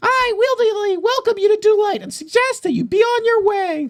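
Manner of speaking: very high, tiny owl character voice. Voicing a little owl who greets the players from his door: little owl character voice. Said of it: "a Technicolor little owl".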